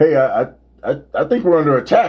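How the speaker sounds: put-on stammering, freaked-out, panicking radio voice. Retelling a radio host's reaction to the attack: imitating panicking Howard Stern. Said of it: "freaking out".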